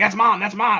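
put-on high, loud hollering. Retelling a TikTok video of a guy fishing off a pier: imitating a man yelling. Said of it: "but he's yelling".

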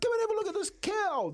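put-on very high, frantic, panicked child's voice. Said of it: "like this, like this".

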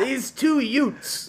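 very loud, high-pitched yell. Joking about sounding like someone else: Joe Pesci impression. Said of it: "I just end up sounding like Joe Pesci".

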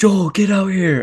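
put-on very high, piercing scream. Retelling how she called out while they were home alone: imitating someone screaming. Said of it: "she just started screaming".

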